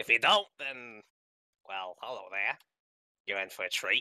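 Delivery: goblin character voice, dropped low. Introducing the goblin ranger character to the group: Wellblood goblin voice. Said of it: "neutral evil goblin ranger".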